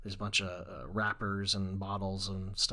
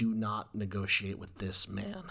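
forceful delivery, much slower. Praising an actress's performance, quoting her line: retelling a forceful line. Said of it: "The way she says it so like forcefully".

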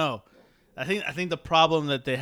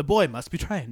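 louder, solemn, wise master voice. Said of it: "right now he sounds like Ewan McGregor, uh, Obi-Wan".

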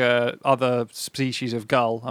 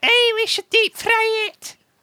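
put-on very high seagull voice with Scottish accent; 4 dB louder than usual. Imagining what the seagull would have said, in a Scottish seagull voice. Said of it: "that sounded a bit like a seagull and Scottish".

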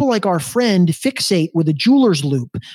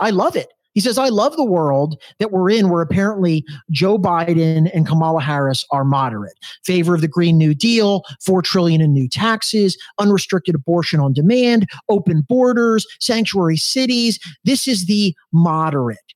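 ordinary delivery

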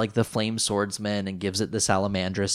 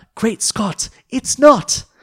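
very loud, very high, shrill fake British accent; 10 dB louder than usual. Recounting a scene where Bakura reacts to magic failing, incredibly fake British accent. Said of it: "in his incredibly fake British accent".

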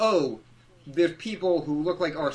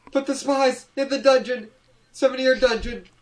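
put-on furious yell, much higher and louder; 9 semitones higher, 4 dB louder than usual. Describing a character who flips out, acting out his line: imitating a furious outburst. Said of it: "He flips out".

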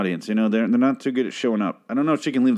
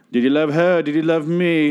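pitched-up, hammy, over-the-top put-on British accent; 6 semitones higher, 4 dB louder than usual. Describing a TV scene, imitating Audrey's Austin Powers-like accent. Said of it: "It's like this very Austin Powers impression".

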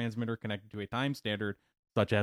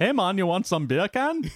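put-on, heavily laid-on Jamaican accent, raised voice; 9 semitones higher, 8 dB louder than usual. Joking with co-hosts, going back to a put-on Jamaican accent. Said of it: "Back to the Jamaican thing again".

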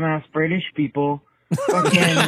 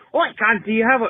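pitched-up, put-on British accent drifting toward Australian; 5 semitones higher than usual. Mocking how people in Britain talk: imitating a British accent. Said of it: "I sound more Australian than anything else".

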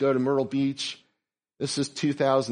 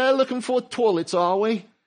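put-on British accent, pitched up; 8 semitones higher, 3 dB louder than usual. Quoting a man who spoke behind them at Lowe's, British accent. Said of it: "This is a British accent".

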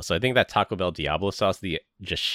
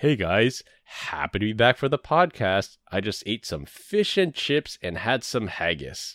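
relaxed, easygoing, chatty conversational voice; 3 semitones higher than usual. Doing an impression of an absent co-host who is in London: Glenn impression. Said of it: "here is my Glenn impression".

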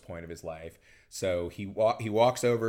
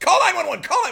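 acted-out yell, much higher pitch, much louder; 12 dB louder than usual. Retelling a movie scene where a man sees someone in the yard, retelling a yell. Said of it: "he suddenly just yells".

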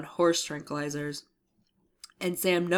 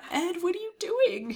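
very high, squeaky, mock exasperated voice. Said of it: "and I was all".

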